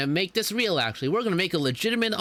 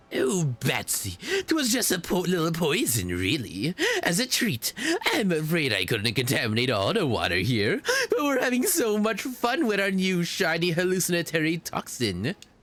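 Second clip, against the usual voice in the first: villainous clown character voice. Playing a character accused of poisoning the springs, answering the accuser in a Joker voice. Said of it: "I have to get the perfect Joker voice ready".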